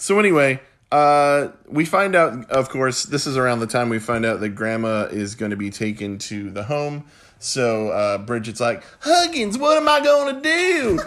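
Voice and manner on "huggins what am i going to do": put-on high-pitched Southern accent. Retelling what Bridget says to Huggins in the show: Southern accent as Bridget. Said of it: "That's a better Southern accent than they did".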